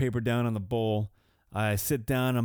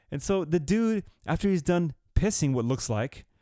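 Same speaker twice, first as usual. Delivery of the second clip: ordinary talk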